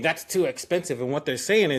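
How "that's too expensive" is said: ordinary delivery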